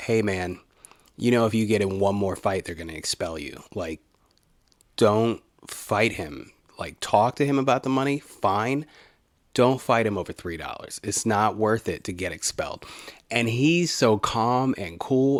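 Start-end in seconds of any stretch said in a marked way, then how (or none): none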